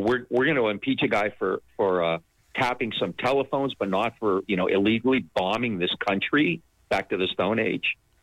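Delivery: ordinary delivery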